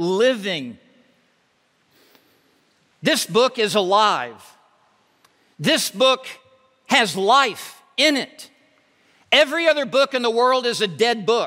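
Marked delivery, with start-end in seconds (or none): 0.0-0.8 living stressed hard and set apart. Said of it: "I want to emphasize this word".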